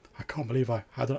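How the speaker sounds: put-on dazed, stunned, shell-shocked voice. Describing a shell-shocked monk talking to himself, the speaker voices him: imitating a shell-shocked monk. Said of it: "the sort of like almost like shell shocked like monk".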